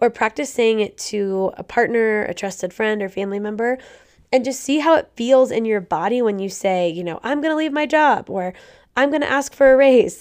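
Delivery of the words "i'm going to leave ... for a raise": higher-pitched, ungrounded, untrue-sounding delivery. Showing how your voice rises on examples that aren't true, voice going higher. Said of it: "my voice went higher".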